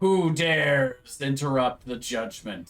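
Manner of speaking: huge, booming voice echoing as if from afar. The game master voices a booming voice from the north. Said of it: "you hear this booming voice".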